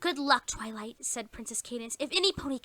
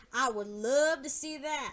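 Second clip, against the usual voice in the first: dry, mocking, sarcastic tone. Reading a story aloud, a pony doubting a boast: sarcastic. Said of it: "said Applejack sarcastically".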